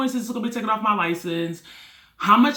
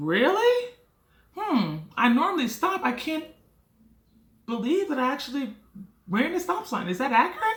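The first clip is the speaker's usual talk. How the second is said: sing-song, feigned innocent disbelief; 6 semitones higher than usual. Retelling being pulled over, the speaker replays their act for the officer: feigned innocent disbelief. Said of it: "going along with my Oscar-winning performance".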